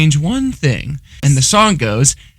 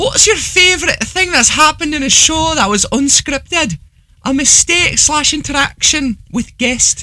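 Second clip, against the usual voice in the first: put-on voice, pitched very high; 13 semitones higher than usual. Reading out a listener's question in the asker's voice: reading like Emma. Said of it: "I'm gonna read it like Emma".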